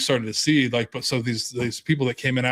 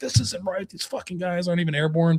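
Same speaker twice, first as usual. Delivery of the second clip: angry, pissed-off griping, pitched up; 6 semitones higher than usual. Retelling paratroopers complaining about another unit's patch: imitating angry soldiers. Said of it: "these guys just fucking getting all pissed off".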